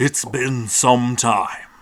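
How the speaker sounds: booming, slow voice. Voicing a sphinx greeting the party: booming sphinx voice. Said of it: "With a booming voice".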